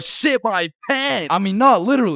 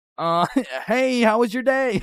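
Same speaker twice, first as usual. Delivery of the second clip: put-on awkward girl's voice; 2 semitones higher than usual. Retelling how a girl greeted him awkwardly: imitating Jessica. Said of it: "Jessica's out here looking at me like".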